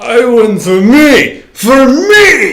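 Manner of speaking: very loud, high, very slow bellow, me stretched. Dodge rolling toward safety in the game, yelling as Ivan Drago. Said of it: "in the personality from Rocky Four, yells".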